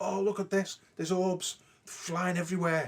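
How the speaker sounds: giddy, high, wild, carried-away overexcited exclaiming. Retelling how the group reacted to orbs: imitating an overexcited group. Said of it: "the gang were going ape shit".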